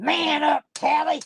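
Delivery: put-on tough-guy voice. Telling how Jose tells Tally to man up, imitating Jose's man voice. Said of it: "up in his man voice".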